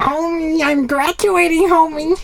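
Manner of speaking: very high cartoon mom voice. Joking about her graduation, the speaker talks in a Marge Simpson voice. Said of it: "You sound like Marge Simpson".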